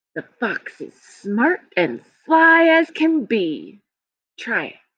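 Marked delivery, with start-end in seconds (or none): 0.1-3.8 smooth-talking, swooping pitch, all in one phrase. Showing learners the right way to read a poem: phrased like talking. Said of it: "scoop up phrases and say them all at once".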